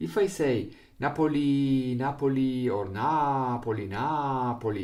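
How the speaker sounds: loud Napoli, syllables given uneven beats. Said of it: "the length is not the same".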